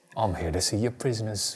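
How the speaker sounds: put-on English accent. Trying the Charles Dickens voice again after it sounded Australian. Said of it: "That sounded a little bit better".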